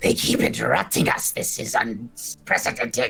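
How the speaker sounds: fed-up, wrathful, indignant angry voice. Narrator voicing the angriest of three characters, in an angry voice. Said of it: "the angriest of the three".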